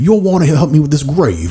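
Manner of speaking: horrible, high-pitched, put-on British accent. Asked to play a gravedigger, speaker retells doing a horrible British accent. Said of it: "I did a horrible British accent".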